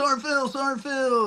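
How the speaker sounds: high yelling. Recounting chaos under gunfire, the speaker imitates Americans yelling at him. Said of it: "Americans over here yelling at me".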